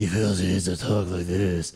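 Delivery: low, deep, growling hero voice. A Batman fan mocking how he talks in the movies: growly Batman voice. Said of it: "I feel I need to growl like an animal".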